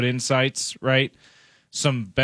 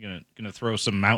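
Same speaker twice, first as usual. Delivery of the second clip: ordinary delivery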